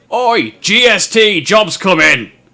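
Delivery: very loud, high booming roar. Game narrator voicing the barman calling out to the whole pub: roaring barman shout. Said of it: "he roars out to the entire pub".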